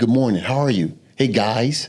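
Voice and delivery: careful, polite, correct English. Retelling how he mimicked a cellmate's speech: imitating John's proper speech. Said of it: "I just start mimicking".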